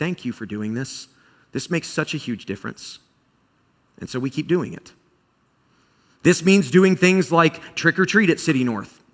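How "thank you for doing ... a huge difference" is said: mock grave, hushed near whisper. Quoting people who thank them during the season, imitating a voice with gravity. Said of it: "with like a gravity in their voice".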